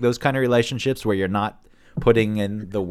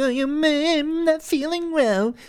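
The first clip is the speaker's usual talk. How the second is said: very high, very drawn-out, slow taunting tone. Speaker acts out how the other person mocks someone who opened up: mocking imitation. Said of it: "The other person mocks it".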